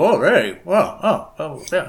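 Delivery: very slow, high, muffled talk through full mouth. Voicing Badger, who is chewing worm kebabs: talking with mouth full. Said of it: "his mouth full".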